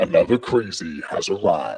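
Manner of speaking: very low, eerie, creepy voice. Showing a new way to introduce viewers in the live chat, creepy voice. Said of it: "look at you sounding all creepy".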